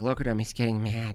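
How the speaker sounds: put-on delighted, happy girl voice. Retelling how a happy girl reacts: imitating a happy girl. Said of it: "she's so happy".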